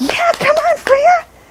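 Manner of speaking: very high, excited calling voice. Showing dog handlers how to call a dog instead: excited, inviting call. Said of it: "gotta make it exciting".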